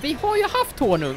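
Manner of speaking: haft stressed, pushed up high in pitch.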